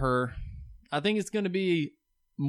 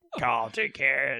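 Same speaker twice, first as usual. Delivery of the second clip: robotic, mechanical speech through a throat voice box; 3 semitones lower than usual. Quoting a man's only line, speaker uses Kane voice-box impression. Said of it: "With his little voice throat box like Kane did back in the day".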